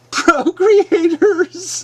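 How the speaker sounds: high, sneering, derisive mocking tone. Imitating an opponent who only repeats a word: mocking the word procreators. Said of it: "I will just mockingly use the word procreators".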